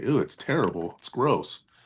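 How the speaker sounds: sarcastic mock disgust. Showing a reply to being asked about a homemade cake, sarcastic mock disgust. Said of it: "I'm a very sarcastic person".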